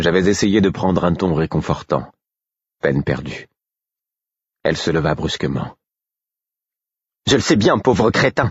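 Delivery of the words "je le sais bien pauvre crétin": spat out with scorn, contemptuous, pitched up. She rejects the narrator's attempt at comfort, spitting with contempt. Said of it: "cracha-t-elle avec mépris".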